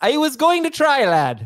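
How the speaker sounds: bad Irish accent, very high, drifting and swooping. Urged by the co-hosts to do an irish accent, the speaker tries a bad irish accent. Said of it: "That is not. That's like Indian".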